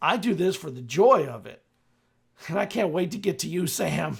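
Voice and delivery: very loud, shrill, in-character yell. Voicing Teddy answering Sam's question mid-fight: yelling in character. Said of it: "just yells out".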